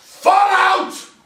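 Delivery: play-acted, very high, loud scream. Retelling surrounding a farmhouse with about forty others, retelling a screamed command. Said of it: "I'm screaming as if there was".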